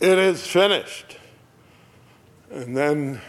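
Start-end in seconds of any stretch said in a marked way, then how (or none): 0.0-1.2 booming, full-voiced, very loud, high cry. Retelling what a dying man says as he comes to the end; retelling a very loud cry. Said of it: "he says in a very loud voice".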